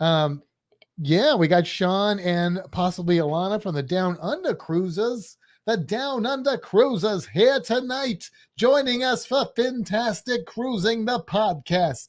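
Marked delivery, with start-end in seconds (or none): 1.3-12.1 higher-pitched sports announcer voice. Welcoming guests to the podcast: Howard Cosell impression. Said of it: "but I'm trying to do an impression".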